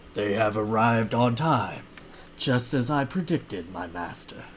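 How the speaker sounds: deep, low, throaty, guttural undead ogre voice. Narrating a game scene, the speaker voices an undead ogre head addressing its master, low guttural tone. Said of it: "it says in a uh, low guttural tone".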